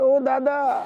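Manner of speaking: high, loud crying wail of dismay.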